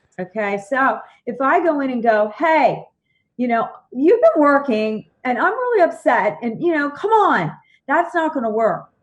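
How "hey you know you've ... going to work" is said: high, harsh, bitchy, naggy nagging tone. Showing how not to bring up being upset, in a bitchy nagging tone. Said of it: "being the bitch tone doesn't work".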